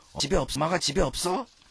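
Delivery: very angry father voice. Retelling a dream where Dad asks if Mom is home, mock-angry as possible. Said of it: "최대한 화난 목소리로".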